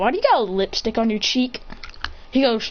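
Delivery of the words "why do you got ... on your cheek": ordinary talk, nothing marked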